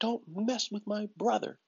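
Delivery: put-on very high, childlike little kid voice. Retelling what he told a boy after a fight, little kid voice. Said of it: "in my little kid voice".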